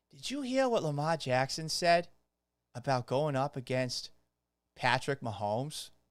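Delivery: soft put-on Boston accent. Speaker gets in character to introduce a sports take: Boston accent. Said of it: "get in character with my uh, Boston accent".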